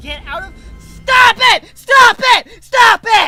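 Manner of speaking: high, loud, frustrated, furious yelling.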